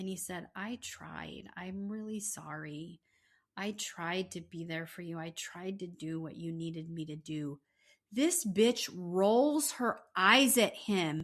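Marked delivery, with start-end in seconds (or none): 0.6-7.6 put-on weeping, tearful crying voice. Retelling a man's apology after he starts to cry: imitating someone crying. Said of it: "he starts to cry".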